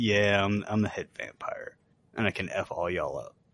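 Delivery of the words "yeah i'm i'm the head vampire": ordinary delivery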